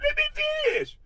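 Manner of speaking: mock squealing pleading voice, pitched way up. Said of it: "made you say".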